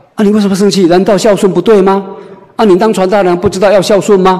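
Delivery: indignant, scolding tone.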